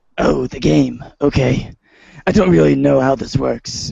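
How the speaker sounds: rough, creaky, raspy caped superhero voice. Reading John's lines in a Batman voice. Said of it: "reading John Egbert as Batman".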